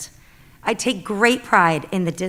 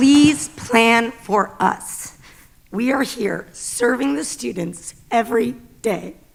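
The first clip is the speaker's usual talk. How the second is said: slow, tearful speech through crying; 3 semitones higher than usual. Pleading for a fair raise for school staff, the speaker talks while crying. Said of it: "I'm so mad that I'm crying".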